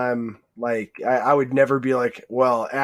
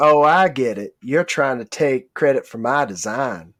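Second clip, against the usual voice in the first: put-on Southern US accent. Quoting an actor's line from a film: imitating Cary Elwes's Southern accent. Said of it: "he did a Southern accent in Twister".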